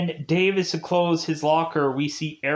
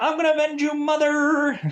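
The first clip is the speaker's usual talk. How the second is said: very high, dorky nerdy voice; 11 semitones higher than usual. Imagining Dave speaking over his mother's grave, Dave in very nerdy voice. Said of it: "In a very nerdy like voice".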